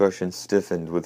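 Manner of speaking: ordinary delivery, nothing marked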